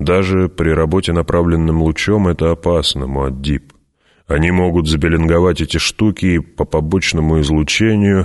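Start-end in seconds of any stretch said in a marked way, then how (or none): none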